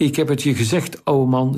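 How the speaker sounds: usual speaking voice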